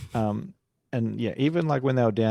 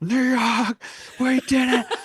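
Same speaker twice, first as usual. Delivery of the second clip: screaming, higher and louder; 5 dB louder than usual. Retelling how a usually cool friend screamed at his phone: imitating a friend screaming. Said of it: "screaming at his phone".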